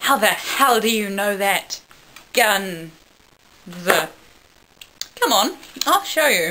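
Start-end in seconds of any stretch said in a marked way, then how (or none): none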